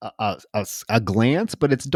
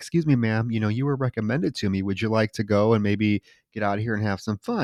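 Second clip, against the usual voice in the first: put-on very polite, nice man's voice, quieter; 6 dB quieter than usual. Retelling a film scene where a man approaches a student: imitating a very polite man. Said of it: "He's being very nice to her".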